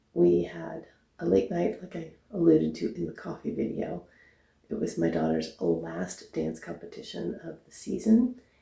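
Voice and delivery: really quiet, soft-spoken, hushed talk. Getting ready for work as the only one awake, talking really quiet. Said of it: "I'm talking really quiet".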